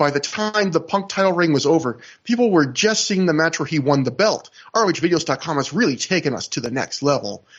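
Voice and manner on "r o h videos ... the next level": play-acted snide, sarcastic, snarky voice. Quoting someone's remark to Matt, in a put-on snarky voice. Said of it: "I'm kind of using my snarky voice there".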